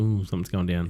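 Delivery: plain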